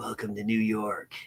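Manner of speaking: hushed, soft action-hero voice. Asked for a quote, the speaker makes one up in Snake Plissken voice. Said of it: "Snake Plissken's voice".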